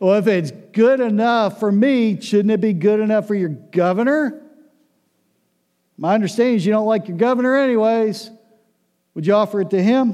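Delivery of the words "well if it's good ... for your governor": mildly sarcastic tone. Reading the passage aloud: slightly sarcastic. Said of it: "read it like this, there's a little bit of sarcasm in there. This tone".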